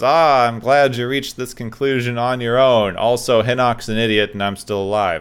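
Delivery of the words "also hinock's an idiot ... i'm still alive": ordinary talk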